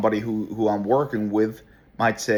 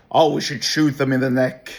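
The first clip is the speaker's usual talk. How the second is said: mock abrasive, rude tone, higher; 4 semitones higher, 4 dB louder than usual. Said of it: "abrasive and ra-, and rude to, to some, and very, very disrespectful".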